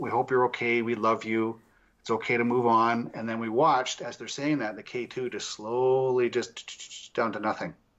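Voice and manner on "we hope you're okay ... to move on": ordinary delivery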